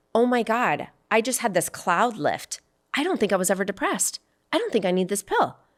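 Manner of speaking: ordinary talk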